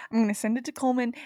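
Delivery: rattled off very fast. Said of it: "You said it so fast".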